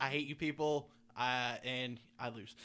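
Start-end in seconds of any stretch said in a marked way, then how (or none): none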